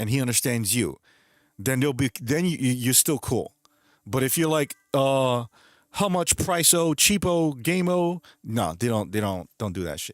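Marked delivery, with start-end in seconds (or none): 4.9-8.2 mocking high, slow fake Spanish with o endings. Mocking a buyer who adds o to english words: mocking fake spanish. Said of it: "Adding O to the end of the word".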